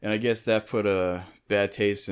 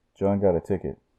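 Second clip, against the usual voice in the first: put-on muffled voice, as if through a wall. Retelling what was overheard from another room, imitating a muffled voice. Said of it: "the muffled voices of his dad going".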